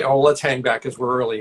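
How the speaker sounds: plain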